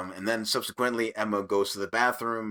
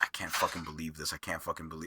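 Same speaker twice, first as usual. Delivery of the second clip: put-on mutter, lower and quieter; 5 semitones lower, 8 dB quieter than usual. Retelling a character's reaction to an announcement: imitating muttering under breath. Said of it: "he's muttering under his breath".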